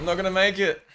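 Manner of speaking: high, loud, panicked yell.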